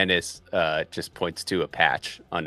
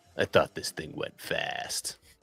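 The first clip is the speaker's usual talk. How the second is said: muttered, mumbled under the breath; 3 dB quieter than usual. Voicing a character walking into the police station, muttered under his breath. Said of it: "And under his breath".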